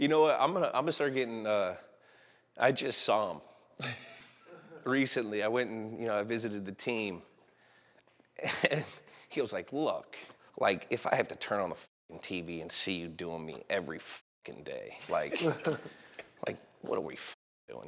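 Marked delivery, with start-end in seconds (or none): 9.7-17.9 whispered, hushed, breathy grumbling rant. Speaker retells what a man said to him on a visit to the team. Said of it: "Give me an impression of".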